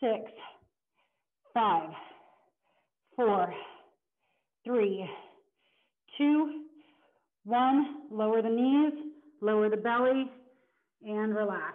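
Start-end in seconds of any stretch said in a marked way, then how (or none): 0.0-8.0 slow, trembling voice shaking with strain. Instructor counting down the end of a plank hold for the class, shaking voice from strain. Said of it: "If you can hear it in my voice, I am shaking".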